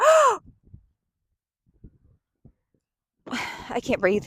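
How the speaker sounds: hammed, high, put-on sickly voice. Retelling faking an illness to the doctor in seventh grade, faking being ill. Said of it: "so I faked an illness".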